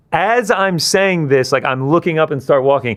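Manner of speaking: ordinary delivery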